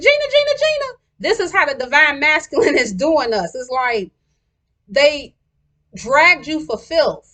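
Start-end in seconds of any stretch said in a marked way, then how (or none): 0.0-1.0 play-acted, repeated, shrill, very high-pitched screaming. Recounting a scene from the show after a woman walks away, retelling Martin screaming. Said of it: "And he was screaming".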